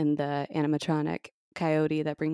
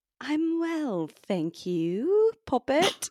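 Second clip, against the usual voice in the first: very high, sing-song, swooping put-on British accent; 10 semitones higher than usual. Co-host answering a greeting on the show, in a british accent. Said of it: "And [name] was doing the British accent".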